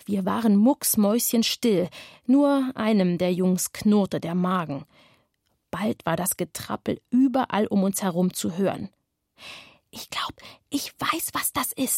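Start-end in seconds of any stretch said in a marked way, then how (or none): 9.9-12.0 whispered, hushed, barely voiced. Anatol speaks to the others as they keep silent, whispered. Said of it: "flüsterte Anatol".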